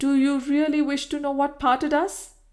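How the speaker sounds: abrupt, sudden, high, bursting exclamation. After beginning slowly, a woman suddenly exclaims her reply to the man who loved her. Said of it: "she suddenly exclaimed".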